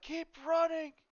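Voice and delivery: urgent yell, very high and very loud. Voicing a man behind the fallen mother: man shouting to keep running. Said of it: "the man behind her is like".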